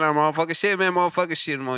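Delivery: Cajun drawl rattled off quickly, words run together. Retelling what a Cajun man kept saying, the speaker is imitating a Cajun man. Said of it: "Like he said it again".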